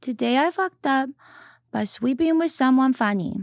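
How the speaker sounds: put-on high babyish voice. Asked by the other speaker to read a post title: baby voice. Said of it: "Can you do your baby voice?".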